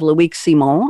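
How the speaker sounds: name said with a put-on French accent. Show host introducing a panelist by name: French accent. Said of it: "I'm saying it with a French accent".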